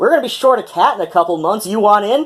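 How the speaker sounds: sarcastic welcoming tone. Retelling inviting a stray cat inside: retelling a sarcastic invitation. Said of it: "sarcastically opened the screen door and invited".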